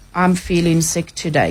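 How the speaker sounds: level, flat monotone with no feeling. Acting out someone answering that they feel sick: flat, expressionless tone. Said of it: "it was just that flat tone. It's almost like that".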